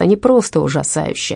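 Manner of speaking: plain reading voice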